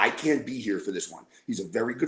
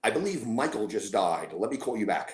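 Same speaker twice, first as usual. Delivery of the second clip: ordinary talk, nothing marked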